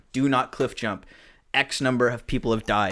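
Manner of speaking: ordinary delivery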